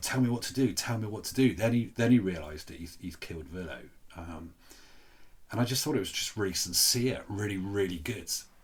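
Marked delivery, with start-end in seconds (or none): 0.0-1.5 high-pitched screamed, pleading delivery. Retelling a scene where a character screams at a guard: imitating someone screaming. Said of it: "he's screaming at the other one".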